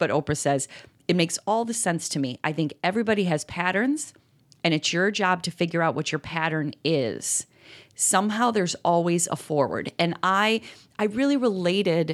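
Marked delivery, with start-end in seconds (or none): none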